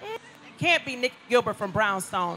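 ordinary talk, nothing marked

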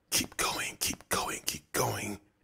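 hushed, breathy whisper under the breath. David, pressed hard against the wall in a dark alley, whispers. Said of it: "he whispered".

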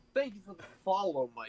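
aggressive, combative, ready-to-fight delivery. Imitating the other speaker thanking a follower, intense combative tone. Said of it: "you were ready to just come at me".

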